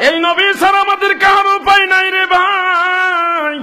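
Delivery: high-pitched shouted call.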